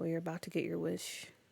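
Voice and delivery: ominous threatening voice. Reading a chat message aloud: ominous, threatening reading. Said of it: "why did it sound so ominous when she said it".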